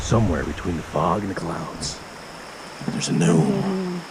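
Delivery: very low, deep, swooping, dramatic movie-announcer voice. Describing a foggy spot in the Catskills, in a movie-announcer voice. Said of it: "I did my my movie announcer voice".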